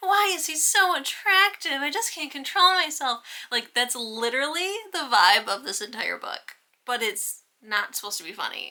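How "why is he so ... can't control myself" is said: very high, loud woman's voice. Describing a book's heroine, voicing her lines in a high-pitched female voice. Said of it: "high-pitched female's voice who's like".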